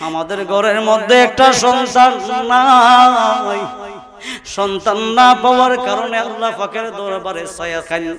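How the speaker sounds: wailing scream.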